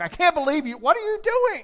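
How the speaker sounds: mock, very high, loud, mad, scolding shout. Retelling yelling at him after he damaged the car, retelling own angry yelling. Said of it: "I remember yelling at him like".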